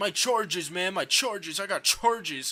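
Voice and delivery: puffed-up tough-guy voice. Mocking someone who puts on a big boy act: imitating a tough big boy act. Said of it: "he puts on this big boy act".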